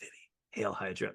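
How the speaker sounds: hushed, soft whispered aside. Retelling saying a line to a baby: imitating own whisper. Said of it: "whisper it to Vivi".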